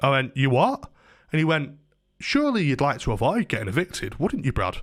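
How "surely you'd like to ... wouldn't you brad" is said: put-on cunning, patronising tone. Retelling what a man said to him: mock-patronising tone. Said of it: "talking like that to me".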